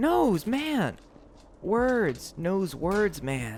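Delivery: high, anime-style cartoon character voice. Joking about a guy who knows words, slipping into an anime voice. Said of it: "I'm getting into the anime voice again".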